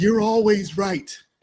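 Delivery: dry mocking sarcasm. Retelling what the wife says to him: imitating a wife being sarcastic.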